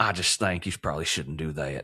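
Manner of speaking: subtle, understated, held-back Southern accent, low. Practising accents together with another speaker, subtle southern accent. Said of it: "a more subtle southern accent".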